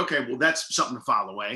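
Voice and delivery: ordinary talk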